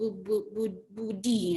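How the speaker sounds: slow, halting, stammering beginner reader. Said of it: "kayak orang belajar membaca gitu".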